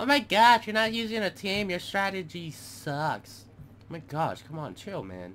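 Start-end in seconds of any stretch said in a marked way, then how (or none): 0.0-3.4 very high, put-on, mocking voice. Gamer anticipating people criticizing his no-team strategy, mocking imitation of critics. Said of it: "people are gonna be like".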